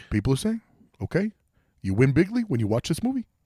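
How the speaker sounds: cartoonish bear voice with a mobster tone. Hyping a film to the others, in a Yogi Bear mobster voice. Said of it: "you sound like if Yogi Bear joined the mob".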